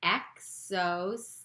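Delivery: slow, deliberate pronunciation of each part. Teaching a new word for listeners to repeat along: said slowly. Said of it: "Say it slow with me".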